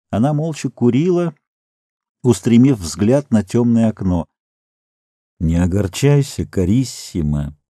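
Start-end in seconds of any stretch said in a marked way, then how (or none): 5.4-7.5 quiet, soft voice. The artist, sitting on Lea's armchair with his lips to her hair, says quietly. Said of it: "тихо сказал художник".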